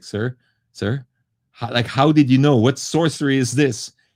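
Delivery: put-on trembling, fearful, scared voice. Retelling a repair shop worker's reply after being caught: imitating a trembling, fearful voice. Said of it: "the trembling and the fear in his voice".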